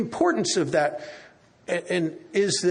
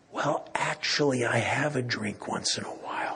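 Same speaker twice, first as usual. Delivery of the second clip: soft, hushed, hush-hush half-whisper, kept quiet; 7 semitones lower, 5 dB quieter than usual. Retelling what a woman said after looking left and right: imitating a half-whisper. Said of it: "she whispers".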